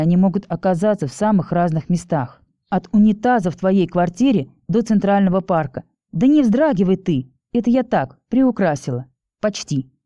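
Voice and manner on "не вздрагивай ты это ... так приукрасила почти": plain reading voice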